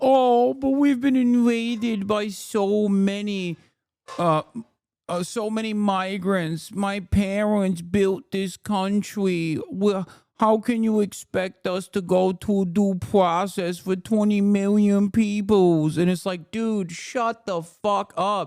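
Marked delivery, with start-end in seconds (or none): 0.0-16.0 mocking, mealy-mouthed imitation. Mocking someone's excuse for eroding due process: mealy-mouthed mocking imitation. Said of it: "he's just like".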